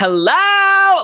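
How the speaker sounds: very high yell, stretched long and drawn out. Busting in to announce themself, the speaker is yelling. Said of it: "Like I yell it".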